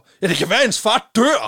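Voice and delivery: high, loud, blurted shout. Speaker recounts a boy in class shouting out; retelling a boy's shout. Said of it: "der bare råber".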